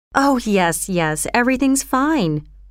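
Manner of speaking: plain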